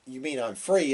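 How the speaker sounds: ordinary talk, nothing marked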